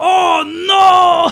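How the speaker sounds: put-on anime scream, very high and loud.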